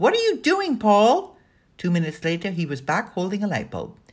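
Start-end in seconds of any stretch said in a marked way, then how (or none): 0.0-1.4 loud, very high-pitched calling out. Calling after a friend who just bolted up the stairs, calling out. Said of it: "Kat called out".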